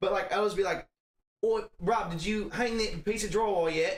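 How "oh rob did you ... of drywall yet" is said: slow, fake put-on Australian accent. Retelling talking to a coworker at work in a put-on character voice: put-on Australian-sounding accent. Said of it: "they were fully convinced I was Australian".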